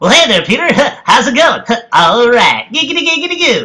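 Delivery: put-on voice, pitched very high with swooping pitch. Announcing an impression, then speaking as the character: Quagmire voice. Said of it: "this is Quagmire from Family Guy. Here we go".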